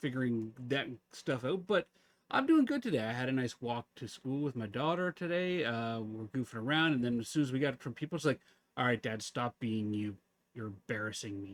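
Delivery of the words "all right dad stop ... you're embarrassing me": mock dead-serious deadpan, lower pitch. Retelling how the daughter told dad to stop: imitating daughter, mock dead serious. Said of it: "these dead serious resting bitch face".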